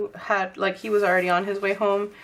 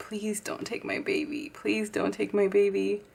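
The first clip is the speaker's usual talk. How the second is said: mock tearful pleading while bawling; 5 dB quieter than usual. Recalling a pregnancy scare on the toilet, retelling tearful begging. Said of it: "I just started begging God".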